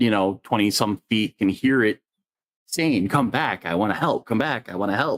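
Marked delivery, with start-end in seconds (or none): 3.1-5.2 small, wee, little tiny creature voice. A creature calls after a frightened kid, in its little tiny voice. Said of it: "in its little tiny voice".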